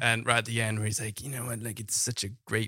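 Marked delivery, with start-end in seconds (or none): 1.2-2.7 put-on soft, hushed famous-actor voice. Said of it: "why I'm speaking like this".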